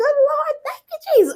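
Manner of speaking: mock very high outcry, screamed out loud. Retelling spotting a UPS truck while driving: retelling screaming out loud. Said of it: "I just screamed out loud".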